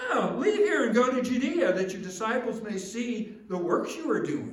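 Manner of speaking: loud, high-pitched, mocking taunt.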